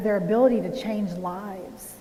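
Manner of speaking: ordinary talk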